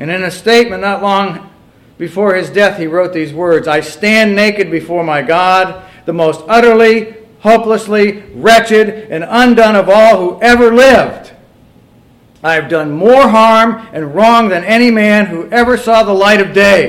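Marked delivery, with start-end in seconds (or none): 3.7-16.9 high, loud, slow desperate voice. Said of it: "Do you hear the desperation in this man's voice".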